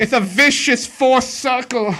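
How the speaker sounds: random fake British accent, very high, shrill, loud. Talking about Star Wars news, the speaker slips into an accent: fake British accent. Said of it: "What was that accent?".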